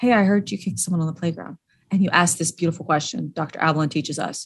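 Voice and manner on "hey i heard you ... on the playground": easy, even, calm and casual everyday tone. Demonstrating how to confront someone without raising your voice, calm, casual elevator tone. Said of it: "the elevator tone of voice. No elevated, you're not raising your voice. You're not talking down to them".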